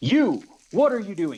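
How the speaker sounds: high, hard, challenging yell. Confronting the necromancer ahead, yelling at the necromancer. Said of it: "I'm gonna yell at the necromancer".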